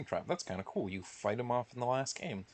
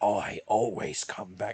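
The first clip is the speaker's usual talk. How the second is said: deep British voice, loud, slow and drawn out; 7 dB louder than usual. Ranking a game's characters, quoting one from the games: deep British William Afton voice. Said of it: "he just has this deep British voice".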